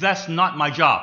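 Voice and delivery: loud, self-righteous, firm delivery. Retelling what a 13-year-old said back to him: strong, self-righteous voice. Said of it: "in a strong voice, self-righteous voice".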